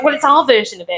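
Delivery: cheeky, sassy tone. Retelling what a restaurant manager said about the cornbread: imitating a sassy manager. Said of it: "the manager was very sassy".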